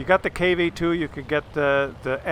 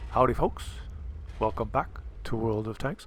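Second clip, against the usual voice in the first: soothing, pleasant, low, put-on English accent; 5 semitones lower, 5 dB quieter than usual. Retelling how a video's host opened his video; pleasant English-accent impression. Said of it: "a very pleasant-sounding English fellow".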